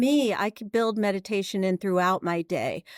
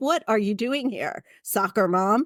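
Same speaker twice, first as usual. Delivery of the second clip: mock disdainful, scornful tone. Retelling how tattooed men at motorcycle lessons looked at her: imitating disdainful scorn. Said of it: "looked at me with such disdain".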